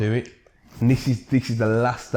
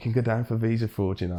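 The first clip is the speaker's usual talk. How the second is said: voiced, hushed, secretive stage half-whisper; 4 dB quieter than usual. Retelling a remark made to a companion while handing over passports: retelling a half-whisper. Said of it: "I remember whispering to him".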